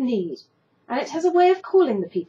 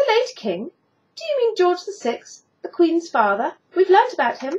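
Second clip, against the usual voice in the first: bright, eager, pitched-up voice; 7 semitones higher than usual. A girl asks about the king she learned of at school: asked brightly. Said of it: "she brightly asked".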